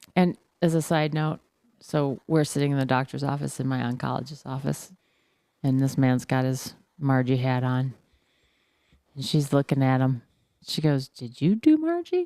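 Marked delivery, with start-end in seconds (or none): 11.0-12.2 mock very high, probing questioning tone. Retelling what a woman asked a man in the oncologist's office, imitating a questioning tone. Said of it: "a questioning tone".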